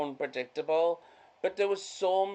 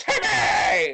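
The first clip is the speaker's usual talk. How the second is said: put-on cartoon boy yell, pitched up; 7 semitones higher, 7 dB louder than usual. Retelling a mother and child at a slide, shouting as Timmy. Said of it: "He's like".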